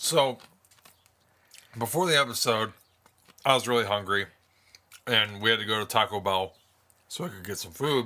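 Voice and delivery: speaking while chewing ice. Answering the host's question for the audience at home, talking while chewing ice. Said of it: "So I'm chewing some ice".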